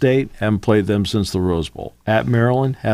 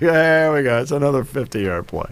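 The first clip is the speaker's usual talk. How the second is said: mock sarcastic broadcaster voice, higher; 4 semitones higher than usual. Retelling a radio broadcaster's call of a long run, imitating Pete Arbogast's sarcasm. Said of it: "Pete was just, like, so sarcastic about it".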